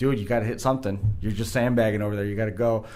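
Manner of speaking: usual speaking voice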